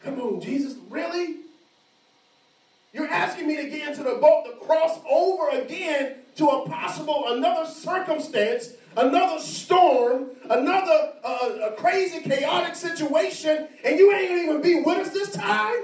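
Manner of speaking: high, loud, incredulous, resisting, pleading tone.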